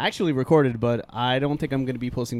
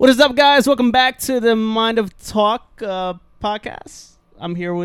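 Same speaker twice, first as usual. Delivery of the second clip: far too loud, high, ear-hurting, overdone; 9 semitones higher, 7 dB louder than usual. Opening the podcast intro to listeners, too loud. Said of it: "You're too loud".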